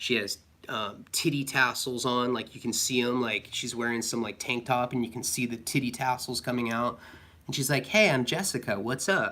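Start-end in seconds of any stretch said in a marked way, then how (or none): 7.8-9.3 mock bubbly, vivacious, perky sing-song voice. Retelling a late-night visitor's greeting: imitating a perky, vivacious greeting. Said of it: "she's all, like, perky and vivacious".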